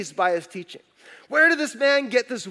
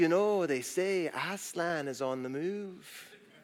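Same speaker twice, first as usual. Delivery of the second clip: put-on British accent, unplaceable; 4 semitones lower, 10 dB quieter than usual. Quoting the Beaver from the book: uninterpretable British accent. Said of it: "he has some uninterpretable British accent".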